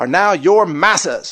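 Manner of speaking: put-on old-fashioned antebellum Southern accent. Voicing the state's words with plantation inflection: imitated old Southern accent. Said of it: "I said that attempting to use the inflection of the old slave plantations in the South".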